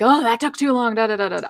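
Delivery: mock angry, impatient yell. Imitating impatient people in a queue: imitating someone yelling. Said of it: "they start to yell like".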